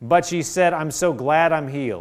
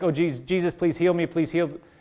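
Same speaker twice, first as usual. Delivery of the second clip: put-on pleading tone, quieter; 3 dB quieter than usual. Retelling what a woman said while trying to get up, imitating her begging. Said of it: "she was begging".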